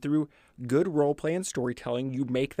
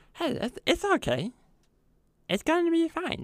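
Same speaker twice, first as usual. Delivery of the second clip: sincere, earnest put-on voice, much higher. Showing how a character would console someone having a rough day: sincere character voice. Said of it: "be sincere in that voice".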